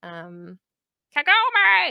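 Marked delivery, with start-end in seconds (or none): 1.2-1.9 very high, loud shout. Talking about the anime, shouting Kagome in an Inuyasha voice. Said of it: "I have to do the voice every time".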